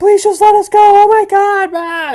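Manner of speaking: very high, tearful, terrified, crying pleading voice. Voicing the girl's scared friends pleading to be let go: crying terrified children.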